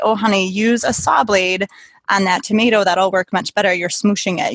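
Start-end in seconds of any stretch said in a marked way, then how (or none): none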